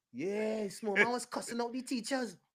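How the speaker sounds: very loud, high-pitched hollering yell. Retelling how people yelled news down the street: imitating neighbors yelling. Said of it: "you would actually hear people yelling".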